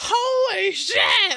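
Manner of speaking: very high, startled scream, "holy" drawn out. Retelling being bitten by something in the lake: retelling a scream. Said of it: "And I screamed".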